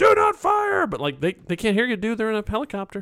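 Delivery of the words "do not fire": shrill, very high, loud screaming shout. Retelling how a man ran at the helicopters, imitating someone screaming. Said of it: "He's just screaming into the air".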